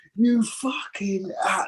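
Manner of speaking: high, drawn-out screaming. Recalling getting out of the car and demanding his hotel: retelling his own screaming. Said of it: "I'm screaming".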